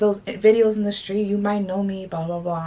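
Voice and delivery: ordinary talk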